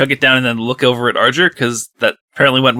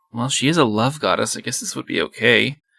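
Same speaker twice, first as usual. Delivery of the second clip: soft, quiet muttering under the breath; 2 semitones lower, 7 dB quieter than usual. Voicing a character who eyes a sweet drink: muttering to himself. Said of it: "he just kinda mutters to himself".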